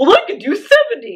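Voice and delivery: mocking show-off bro voice. Mocking a push-up bragging contest among kids: imitating a show-off bro. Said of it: "That's what you sound like to me".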